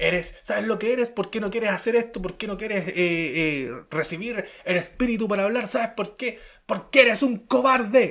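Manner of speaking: hectoring, high-pitched, half-shouted mild yell. Retelling how a man confronted the speaker: imitating someone shouting. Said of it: "Él empieza a gritar y empieza a decirme".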